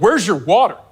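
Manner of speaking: authoritative, commanding, demanding tone. Retelling what a man at the gym asked: imitating an authoritative voice. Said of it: "real authoritative".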